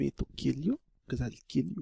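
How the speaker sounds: put-on Russian accent. Showing friends their dialects, the speaker tries a Russian accent. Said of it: "That is your Russian accent".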